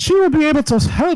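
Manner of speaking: amateur attempt at Irish accent. Role-playing a scene while drinking: attempted irish accent. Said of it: "I'm drinking and I'm trying to do an Irish accent".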